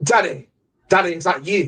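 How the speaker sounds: put-on British accent. Retelling a movie scene, voicing a character with a british accent. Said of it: "Why is he suddenly British?".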